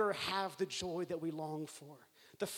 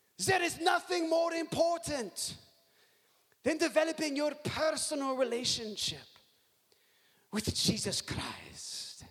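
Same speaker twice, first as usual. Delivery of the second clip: put-on German accent, pitched up high; 8 semitones higher, 3 dB louder than usual. Quoting a speaker's line to a large crowd, in an imitated German accent. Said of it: "He said this in a much cooler German accent than what you're about to hear".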